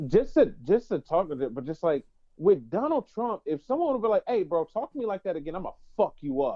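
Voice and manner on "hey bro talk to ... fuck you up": firm, severe, stern tone. Imagining what someone should have said to him, stern. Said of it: "they'd have just said that sternly".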